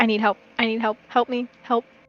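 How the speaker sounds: soft, pleading half-whisper under the breath. Playing a drunk character who asks a sibling for help: half-whispering in character. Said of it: "lean over and whisper to Remy".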